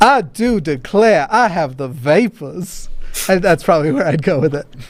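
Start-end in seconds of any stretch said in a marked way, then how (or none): 0.0-2.9 genteel Southern lady drawl. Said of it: "a Southern Belle kind of thing".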